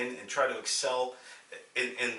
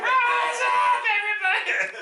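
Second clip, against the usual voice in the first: put-on old man voice, higher and louder; 11 dB louder than usual. Retelling what the president shouted at the stadium: imitating Jimmy Carter as an old man. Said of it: "just your typical old man".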